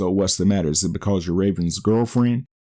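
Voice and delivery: ordinary talk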